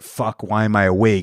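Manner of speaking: ordinary delivery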